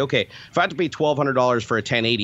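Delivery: ordinary delivery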